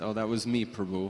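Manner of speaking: ordinary delivery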